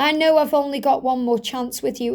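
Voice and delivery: ordinary talk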